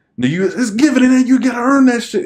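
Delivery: high-pitched, loud yelling.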